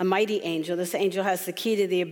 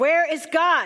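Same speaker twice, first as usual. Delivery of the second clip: stern, raised, very high voice; 9 semitones higher, 6 dB louder than usual. Telling a story, the speaker voices the clergyman asking the boy again, raised stern voice. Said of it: "the clergyman raised his voice".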